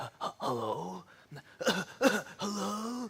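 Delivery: soft, breathy, fake sick voice.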